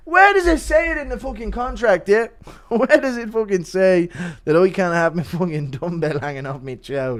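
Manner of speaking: mock flipping-out outburst. Doing a requested impression of Connor told to pull his pants up: impression of Connor flipping out. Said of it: "impression of Connor flipping out".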